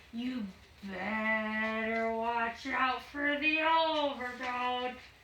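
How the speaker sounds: sinister, dark, creepy ghost-story voice, very slow, drawn out. Demonstrating a sinister voice, like telling a ghost story: dark, sinister, creepy voice. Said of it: "a dark, sinister voice would be like when it's like very creepy".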